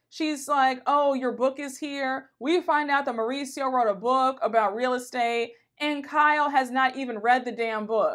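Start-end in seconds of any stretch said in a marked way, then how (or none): 0.9-2.3 put-on disappointed voice. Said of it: "The disappointment in her voice".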